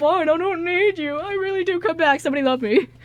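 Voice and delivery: high, loud, whiny, needy goofball voice. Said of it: "And he's like".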